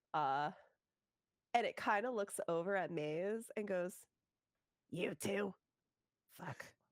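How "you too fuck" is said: sour, seething, fuming, grumpy fey creature voice. Game master voicing a satyr snapping at Maze, fuming satyr. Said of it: "because it's fuming".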